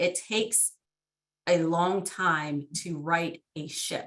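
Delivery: deliberately slow. Responding to another speaker in a discussion, said slowly. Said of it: "I always have to say this slowly".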